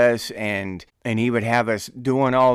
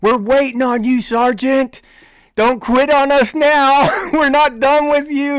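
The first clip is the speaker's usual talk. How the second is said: mock shrill, raised, high, loud yelling; 14 semitones higher, 6 dB louder than usual. Retelling yelling at the sergeant after sprinting back from breakfast: imitating own past yelling. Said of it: "started yelling at him".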